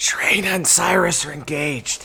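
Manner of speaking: secretive stage whisper. Leaning over to Carrie to explain what's going on: conspiratorial half-whisper. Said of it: "she whispers quiet conspiratorially".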